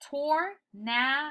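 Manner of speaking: "tornado" said slow and drawn out. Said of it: "Next one".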